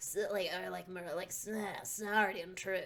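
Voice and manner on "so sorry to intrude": snide put-on character voice, quieter. Trying out a voice for the game character Lang: snide Lang voice. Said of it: "snide sounding".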